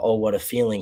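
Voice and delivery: ordinary talk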